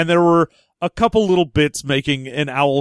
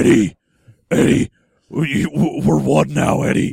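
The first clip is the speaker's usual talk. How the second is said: deep, rough, low creature growl. Comparing the voice in the movie to Venom: Venom voice. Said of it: "basically Venom from the Venom movies".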